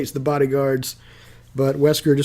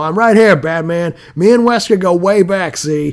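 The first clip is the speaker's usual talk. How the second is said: mock raised shouting, loud and pitched up; 7 semitones higher, 5 dB louder than usual. Narrating a Batman story, voicing Scarface shouting at Batman: Scarface yelling. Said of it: "he's yelling at him".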